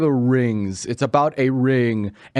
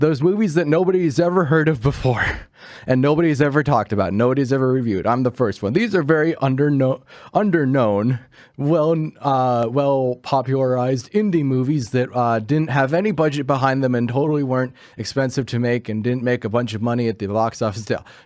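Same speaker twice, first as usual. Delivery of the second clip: normal talking voice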